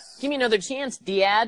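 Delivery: put-on very high, pleading, whiny voice in a Chicago accent. Mocking Jason Jordan's gimmick, the speaker quotes him: Jason Jordan Chicago accent. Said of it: "with his Chicago accent".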